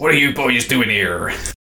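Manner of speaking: put-on old-time 17th-century pirate accent. Recalling a show's mad butcher character, the speaker quotes him in a 17th-century pirate accent. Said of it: "With the 17th century pirate accent".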